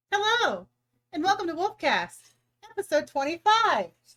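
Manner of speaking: shrill, very loud, very high-pitched, swooping voice. Opening episode twenty-five of a podcast: high-pitched voice. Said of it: "Still high pitched voice".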